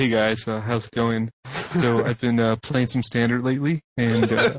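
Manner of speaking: buttoned-up, proper, straight-laced, polite tone. Imitating a podcast guest who turned straight-laced without swearing: imitating Jay gone straight-laced. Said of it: "he just turned totally straight-laced".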